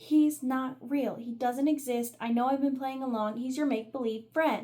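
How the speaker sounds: really angry, furious blow-up. Retelling a scene where a father gets angry: imitating an angry father. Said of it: "he got really angry".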